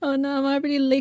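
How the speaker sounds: high, flustered, panicked exclamation. Retelling realizing the stream was late: retelling own panic. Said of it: "so I was panicking".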